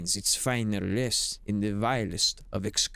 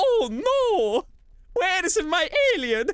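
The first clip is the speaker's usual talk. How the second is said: cartoon Italian voice, much higher and louder; 6 dB louder than usual. Speaker jokingly shows off another Italian impression: Mario voice. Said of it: "He's like a Mario".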